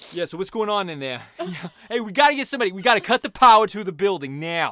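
very loud, high-pitched put-on New York accent. Describing a film, the speaker mimics its Los Angeles characters in a New York accent. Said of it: "everybody in this version of Los Angeles had a New York accent".

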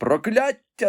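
shrill, very high shout. Stabbed in the heart, a man cries out as he falls, shouting. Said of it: "закричав Гарріс".

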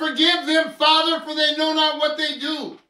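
full-throated shout, very loud and high. Speaker explaining what Jesus meant, yelling at the camera. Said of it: "so I yell".

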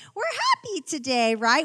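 fake high-pitched voice, put-on, sing-song. Pretending everyone is happy at Christmas, fake high-pitched voice. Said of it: "With that like fake high-pitched voice".

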